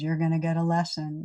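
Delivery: ordinary talk, nothing marked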